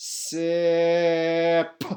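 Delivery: punched final sound. Showing a listener how to sound out a word, punching the final sound. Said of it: "Now I'm going to punch that last sound".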